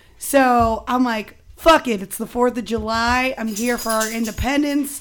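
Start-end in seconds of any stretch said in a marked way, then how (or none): none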